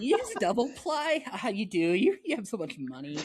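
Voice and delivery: high, swooping, fawning starstruck gushing. Pretending to greet a famous guest on a call: mock starstruck gushing. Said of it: "I just start going gaga".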